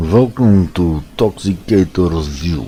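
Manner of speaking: slow, attempted put-on Russian accent. Greeting viewers at the start of the video: attempted Russian accent. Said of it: "I'm trying my Russian accent".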